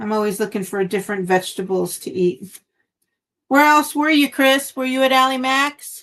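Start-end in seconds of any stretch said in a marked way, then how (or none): 3.5-6.0 loud, full-voice yelling. Asking someone where else he went: yelling. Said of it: "I'm yelling. Sorry, I don't mean to yell".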